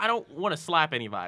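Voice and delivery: ordinary talk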